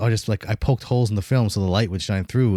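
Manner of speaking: usual speaking voice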